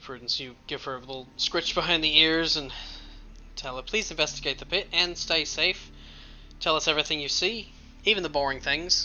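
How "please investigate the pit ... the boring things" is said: put-on New Zealand accent slipping toward Australian. Voicing a player's request to her familiar: put-on New Zealand accent. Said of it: "It's the same accent".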